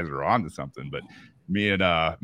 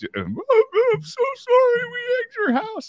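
mock tearful, very high-pitched crying voice; 4 dB louder than usual. Retelling being made by his dad to apologize to the family, retelling a crying apology. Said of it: "I remember walking in there just crying".

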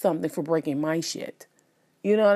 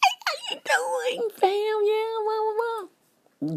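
smooth, sly, petty tone at very high pitch. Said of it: "the smooth kind of pettiness".

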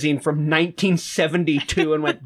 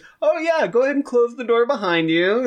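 high-pitched mocking voice; 7 semitones higher than usual. Retelling how Dracula teases Renfield about the welcome mat: mocking Dracula voice. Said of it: "just mocking him for leaving the welcome mat".

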